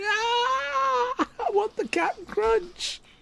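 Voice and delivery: very slow, very high, drawn-out weepy wail, acted out. Imitating a caged woman who wants the captain crunch: mock crying. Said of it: "That's why she's crying".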